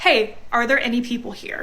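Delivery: normal talking voice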